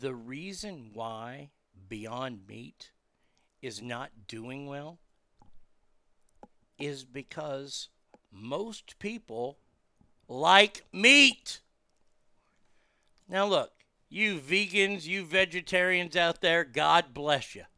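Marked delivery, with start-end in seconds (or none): 0.0-11.6 very deep, drawn-out, deliberate, spelled-out delivery. Speaker tells everybody to gather in close, speaking slowly. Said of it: "I'm going to say this slow".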